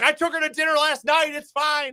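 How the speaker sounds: very high-pitched, defensive and dismissive tone.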